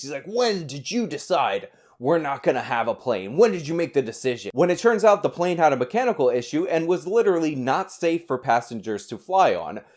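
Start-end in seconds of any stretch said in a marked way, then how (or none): 0.3-4.5 heated, indignant, angry and accusing tone. Retelling Cenk Uygur yelling at customer service staff about the plane: retelling Cenk Uygur's screaming. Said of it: "he's screaming at them like".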